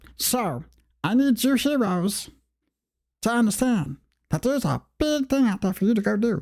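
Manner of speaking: put-on teeny tiny voice, very high, squeaky. Voicing a huge big guy who sits down to address the heroes, in a teeny tiny Stitch-like voice. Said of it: "give them a little teeny tiny voice".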